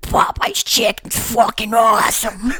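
fully in-character, low put-on voice. Getting in character, the speaker tries the line as a Little Nicky impression. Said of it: "I'm getting in character".

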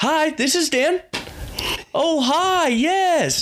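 very high, slow, drawn-out voice. Retelling how he answered a phone call; higher-pitched voice. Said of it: "a little more high pitch like that".

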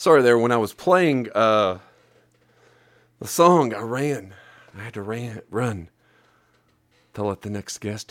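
breathless, winded. Host back after running to let the next guest in: out of breath. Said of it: "So that's why I'm out of breath".

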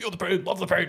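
play-acted, pained, high, mild, toned-down yell. Retelling a movie scene where a coach gets covered in ants: imitating a screaming coach. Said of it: "and he's just screaming, and he goes".

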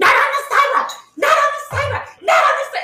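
put-on acted, very high, nagging old-man yelling, repeated. Retelling an old man yelling at bike riders on the sidewalk, imitating an old man yelling. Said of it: "kept yelling at them".

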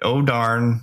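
usual speaking voice

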